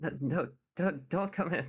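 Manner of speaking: very high, frantic, panicked voice, words stumbling. Voicing a character answering a knock on her door: panicking voice. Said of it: "she just kind of sounds like she's panicking".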